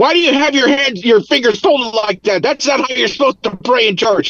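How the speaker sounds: furious yelling. Retelling a ride home from church when the dad was yelling: imitating an angry yelling dad. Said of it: "my dad was angry and he was, like, yelling at us".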